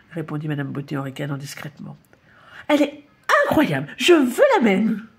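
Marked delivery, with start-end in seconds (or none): 2.7-5.0 sudden exclaiming cry. Madame Vedette, in the salon, talks to Madame Beauté: exclaiming. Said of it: "s'écria Madame Vedette".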